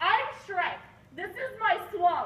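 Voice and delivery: high cartoon ogre voice. Acting one of two Shreks fighting over the swamp: Shrek voice. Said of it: "two Shreks battle for ownership of the swamp".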